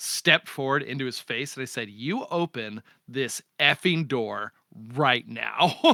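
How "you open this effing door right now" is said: mock furious, slow, deliberate, angry voice. Recounting confronting a man who shut the door on them, retelling an angry demand. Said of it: "Like I got really angry at him".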